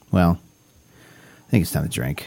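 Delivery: sounding worn out. Host wrapping up a show's sponsor plug, in a tired voice. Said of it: "You sound tired, my guy".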